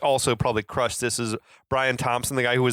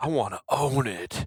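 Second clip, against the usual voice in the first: laid-back, mellow surfer voice; 3 dB quieter than usual. Recapping a story for a co-host, say villain Fender's line in Fender's surfer voice. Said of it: "He did have like a surfer voice".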